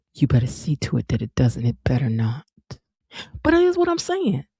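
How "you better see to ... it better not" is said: mock-cold, chilly delivery. Retelling what a woman said to him, imitating a cold tone. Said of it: "this cold look on her face when she said it".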